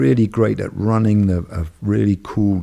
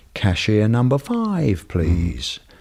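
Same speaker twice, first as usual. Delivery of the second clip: irritating, lilting, sing-song rise-and-fall delivery. Imitating the call that comes while waiting in a bank line: imitating an irritating rise and fall voice. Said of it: "in this sort of irritating rise and fall voice".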